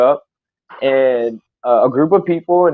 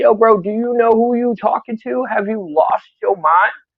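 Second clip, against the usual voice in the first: heated, confrontational, pitched-up, fight-mode delivery; 8 semitones higher than usual. Retelling a confrontation after being elbowed in the face: retelling an angry confrontation. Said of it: "I went into that mode".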